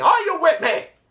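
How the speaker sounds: put-on very high, piercing, shrieking screamed yell. Retelling a wrestler's pep talk to his partner: imitating someone screaming. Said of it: "he screams at her saying".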